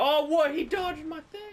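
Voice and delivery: very high, loud, shocked outcry.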